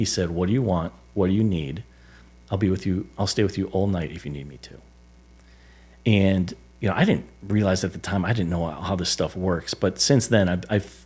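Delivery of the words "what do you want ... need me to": mock whispering. Retelling the loving words he whispered after returning: imitating someone whispering. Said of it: "he whispered".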